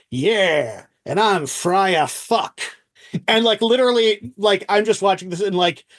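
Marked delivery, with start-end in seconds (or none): 0.1-2.6 rough Irish American gangster voice, very slow, drawn out. Retelling a film scene, replying to Sean Penn, with Gary Oldman as hard-living Irish American gangster. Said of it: "as this hard living Irish American gangster".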